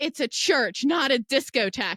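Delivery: put-on loud yell, carrying far. Retelling what the person admitting people into the church yelled: imitating someone yelling. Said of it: "all I hear is him yelling".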